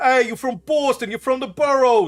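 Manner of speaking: very high, loud put-on New York accent. Trying out accents for a dragon, aiming for Boston but landing on a New York accent. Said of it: "that's New York again".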